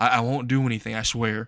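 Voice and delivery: plain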